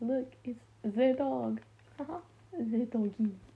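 loud, terrible, fake French accent. Admitting an embarrassing habit, the speaker acts out talking in public in a fake French accent. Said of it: "in public being like".

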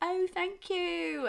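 put-on English accent. Retelling thanking a man who praised their accents, in a fake english accent. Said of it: "heard our accents".

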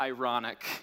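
small, little, sheepish voice. Retelling a reply to his wife about being stressed: little sheepish voice. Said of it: "in a little sheepish voice".

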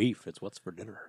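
put-on deep cowboy voice. Answering a friend who teases about liking that voice: Sam Elliott voice. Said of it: "You like that voice, don't you?".

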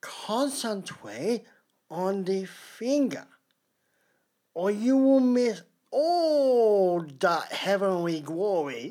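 very slow coaxing, every word stretched out. Taking a turn doing a longer quote: Bruce Lee impression. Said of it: "Oh, I love you, Bruce".

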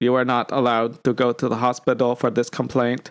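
monotone, dead-level robotic voice. Acting out the AI robot refusing a patient: GSP voice as AI robot. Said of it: "I can't get past the G S P voice now".

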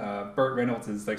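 ordinary talk, nothing marked

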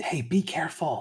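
whispered, high-pitched. Voicing a character who warns a sneaking player: whispering. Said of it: "Sherry just whispers".

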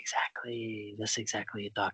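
soft whisper, close to the ear. Confirming what the listener just said, close to their ear: whispering in ear. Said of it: "Can I stop whispering in your ear now?".

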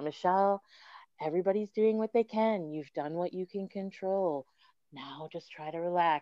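soft, calming, soothing hypnobirthing-style coaching voice. Retelling self-talk during labor, the speaker uses a hypnobirthing voice. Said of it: "in my total hypnobirthing voice".

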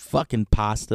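put-on sleazy-sounding voice with New Jersey accent. Imitating a dog brought onto a show: sleazy New Jersey sounding voice. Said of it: "some sleazy New Jersey sounding dog".

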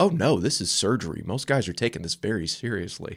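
put-on, straight-faced, deadpan voice. Retelling a doctor's reply during a consult: imitating a deadpan doctor. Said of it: "And straight face".

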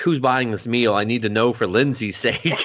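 ordinary delivery

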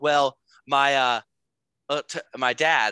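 put-on stuttering voice. Retelling a video of a tournament winner: imitating Charlie Woods stuttering. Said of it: "he kinda stuttered a little bit".

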